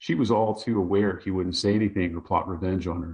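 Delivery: ordinary delivery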